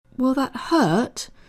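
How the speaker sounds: high, trembling, quavering voice of feigned fear. Reading a story, Yara replies while pretending to be frightened: quavering, pretend-frightened voice. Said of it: "inquired in a quavering voice, pretending to be frightened".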